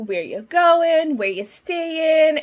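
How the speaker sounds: put-on friendly, hospitable Minnesota accent. Retelling what a woman on a plane asked him, minnesota accent. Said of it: "she starts talking to me like straight up Minnesota".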